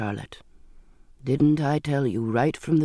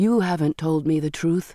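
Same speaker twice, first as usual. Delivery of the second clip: usual speaking voice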